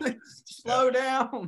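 put-on yelling. Retelling what was said when the boat sped up: retelling own yelling. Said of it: "And I'm yelling".

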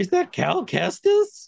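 excited mock gasp, high, slow, wide in pitch.

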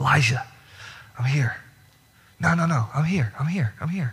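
put-on whisper. Retelling how God draws close to Elijah: retelling a whisper. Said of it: "and he whispers".

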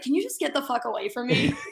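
put-on voice of a mean man. Retelling how Luke answered a girl, imitating Luke being mean. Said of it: "he's just like being so mean".

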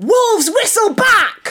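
drawn-out shouting. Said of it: "the woman will shout".

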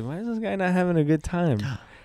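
frightened, high voice. Retelling noticing a guy at a concert who wasn't enjoying it, acting out being scared. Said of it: "And I was all like scared".

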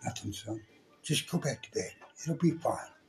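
hushed, gentle, calm fatherly whisper. Retelling what his spooked father told him at night, retelling Dad's gentle words. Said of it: "that sounded kind of gentle".

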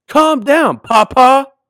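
put-on shrill, very high, very loud little-kid yell. Speaker retells the child standing on the pew mid-sermon, yelling at the preacher: retelling a toddler's yell. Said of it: "my little diva stood up on the pew and yelled".

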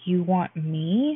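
astonished, amazed, full of wonder. The Orphan Keeper's assistant asks Mercy a question, amazed. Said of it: "She asked, amazed".

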